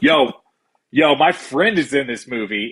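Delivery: slow, casual, street-slang delivery. Retelling what someone said about a movie poster: imitating a casual "yo" way of talking. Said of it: "Why are they talking like that to one another?".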